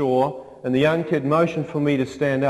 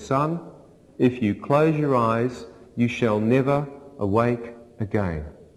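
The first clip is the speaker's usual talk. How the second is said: put-on quiet, soft, gentle voice. Retelling a voice heard while slipping into a coma: imitating a quiet, gentle voice. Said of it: "a quiet and a gentle voice said".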